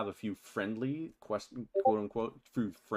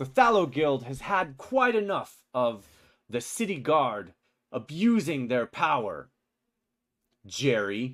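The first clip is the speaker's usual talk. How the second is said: raised, loud voice; 3 semitones higher, 7 dB louder than usual. Voicing the guild leader who confronts the city guard: voicing the guild leader. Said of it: "he steps down off the platform, and begins walking over".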